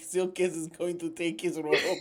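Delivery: put-on near-Russian accent. Mocking another player's line: imitating a near russian accent. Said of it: "You're like".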